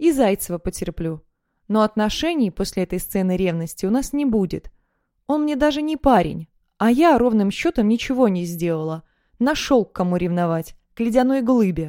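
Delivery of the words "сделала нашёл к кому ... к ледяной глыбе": plain reading voice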